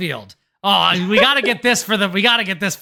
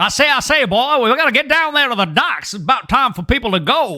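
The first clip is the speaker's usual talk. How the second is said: blustery cartoon rooster voice with a southern accent; 4 semitones higher than usual. Imagining the cartoon rooster inside a video game world, Foghorn Leghorn voice. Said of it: "I'm imagining like Foghorn Leghorn".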